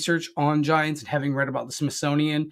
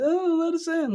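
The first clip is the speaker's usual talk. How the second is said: mock very high, tearful, pleading, crying voice. Imitating the entities that sit outside and cry: imitating crying. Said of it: "Sometimes you'll hear 'em crying".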